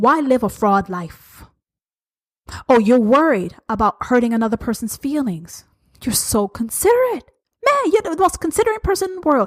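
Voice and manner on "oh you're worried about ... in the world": heavy, mocking, swooping sarcasm throughout. Calling out a listener's excuse of sparing feelings: sarcastic. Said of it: "I'm being sarcastic".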